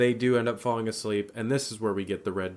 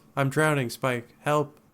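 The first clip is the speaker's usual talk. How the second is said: flat, deadpan delivery with zero feeling; 4 semitones higher than usual. Retelling a scene where a mother calls her son for help: imitating a deadpan delivery. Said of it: "not even with any emotion, just very deadpan".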